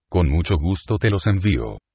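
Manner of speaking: usual speaking voice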